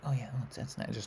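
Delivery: hushed, whispered, tiny mouse-like voice. Retelling how they sound eating in the bedroom: imitating own quiet mouse-like voice. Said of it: "I'm just like a little mouse".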